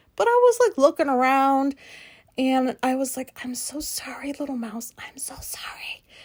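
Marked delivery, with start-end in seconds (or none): 3.4-6.0 very quiet, hushed, breathy, barely voiced whisper. Retelling apologizing to an unseen mouse in broad daylight, whispering. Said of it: "I'm like whispering out there".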